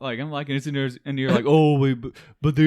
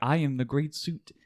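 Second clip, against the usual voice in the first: quieter put-on robot voice; 6 dB quieter than usual. Suggesting an edit that voices a studio suit: Siri voice. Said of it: "like with the Siri voice".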